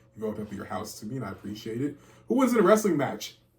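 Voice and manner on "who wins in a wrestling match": sudden, high, loud, hyped-up belted outburst. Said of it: "I'm sorry. Shouldn't have done that".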